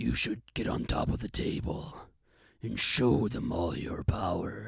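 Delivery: tempting, whispered beast voice. Retelling how an inner beast used to urge them on, speaking in the beast voice. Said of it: "speak to myself in this beast voice".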